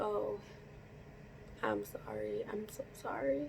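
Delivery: hushed, barely audible whisper. Speaker retelling apologizing to someone smiling outside, retelling a whisper. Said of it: "I'm just whispering".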